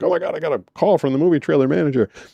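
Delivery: mock thrilled, eager, excited, high voice. Retelling getting a call from the movie trailer manager: imitating own past excitement. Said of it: "and I'm all excited".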